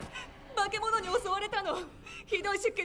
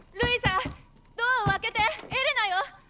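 rushed, loud, fast shouting; 7 dB louder than usual. In a game, a woman calls for someone to open the door: shouting. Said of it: "叫ぶな。".

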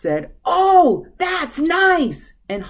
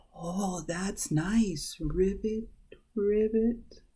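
very small, very quiet, slow half-whisper; 11 dB quieter than usual. Reading a story aloud, the frog answers the snake, half-whispered in a very small voice. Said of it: "whispered in a very small voice".

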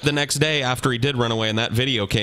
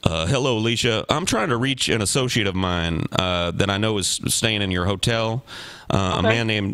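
normal talking voice

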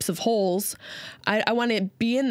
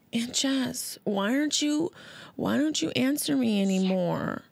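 put-on sad voice, higher; 5 semitones higher than usual. Retelling a message from Karina, who is sad about unanswered calls: imitating Karina sounding sad. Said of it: "And she's like".

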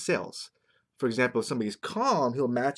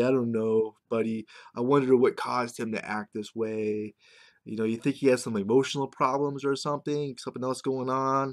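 ordinary talk, nothing marked

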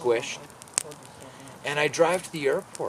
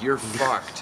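ordinary delivery

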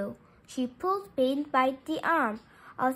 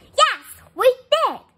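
very loud, high, angry yell; 10 semitones higher, 9 dB louder than usual. Mad that a friend thinks they are lying, a girl answers, yelling. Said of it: "she yelled".

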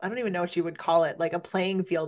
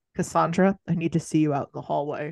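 plain

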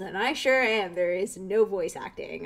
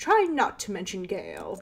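put-on lilting, sing-song, swooping British accent. Voicing the mother character speaking to her child, British accent. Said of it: "I have no idea why I made her mother British".

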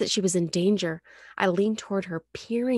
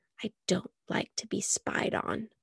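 hushed, breathy, slow near-whisper; 7 dB quieter than usual. She tells the narrator to stop spying on her, softly. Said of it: "she said softly".

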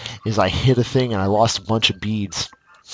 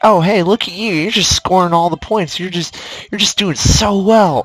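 mocking put-on condescending voice, much higher pitched; 9 semitones higher, 3 dB louder than usual. Ranting about a game, the speaker mimics how it talks: mock-condescending game voice. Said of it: "the most irritating, high-pitched, condescending voice possible".

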